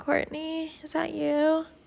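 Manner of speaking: mock drowsy, half-awake voice. Retelling what she said when something woke her: imitating someone half awake. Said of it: "half awake".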